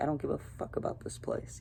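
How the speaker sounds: muttered, whispered under the breath, not caring at all.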